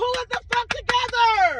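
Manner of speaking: high-pitched, exasperated yelling.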